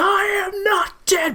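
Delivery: very high, shrill, full-on furious shouting rant. Describing a movie jail-cell scene, quoting the killer's outburst; mock-furious Gemini Killer rant. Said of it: "full on like furious several seconds of just rant".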